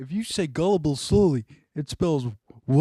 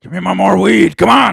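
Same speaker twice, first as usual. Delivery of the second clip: drifting put-on gruff voice, higher and louder; 3 semitones higher, 9 dB louder than usual. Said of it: "I just turned into fucking Harrison Ford there".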